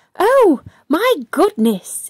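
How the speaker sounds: sharp, high, little squealing exclamation. Henry peers over the mud into the river and reacts, squealing. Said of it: "he squealed".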